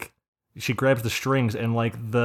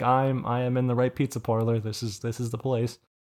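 usual speaking voice

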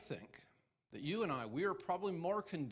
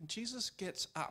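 ordinary talk

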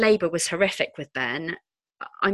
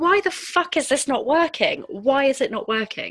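mock shrill, high, pitched-up scream; 8 semitones higher than usual. Retelling screaming at the midwife during labour: imitating her own screaming. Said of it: "I was screaming at the midwife".

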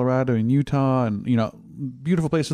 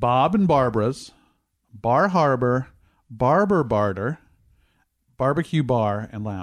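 slow, careful, deliberate word-by-word delivery. Repeating a fake page name, saying it slower so listeners understand. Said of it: "I'll say it slower so we can understand what it says".

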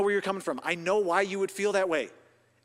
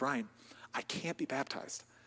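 put-on breathy near-whisper through crying; 7 semitones lower, 12 dB quieter than usual. Speaker retells a woman who came up right after the service, imitating a woman crying. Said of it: "and she's crying".

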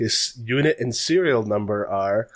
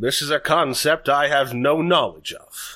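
loud booming voice, louder and higher; 2 semitones higher than usual. Asked to use an inside voice, a character answers in a loud booming voice. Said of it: "maybe take it down a notch".

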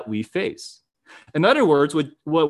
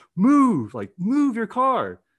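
slow, high, drawn-out yell, climbing in pitch; 7 semitones higher than usual. Retelling how a driver yelled at the cars: imitating someone yelling.

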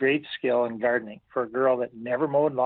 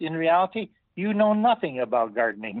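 put-on slightly broken English, pitched higher; 4 semitones higher than usual. Quoting what a woman told him, imitating her slightly broken english. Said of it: "in her little broken English a little bit".

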